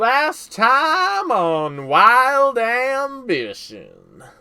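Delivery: very high, very loud, slow Wild West drawl. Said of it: "my my Wild West voice".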